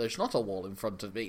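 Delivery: very low, quiet, muttered voice. Retelling a film scene where Sean is told about a wall; Sean impression. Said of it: "It's so you can do this impression".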